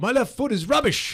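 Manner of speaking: very high, loud, yelled put-on English accent. Recalling the required shout after flubbing a weak-foot shot in a drill, english accent. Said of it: "with an English accent".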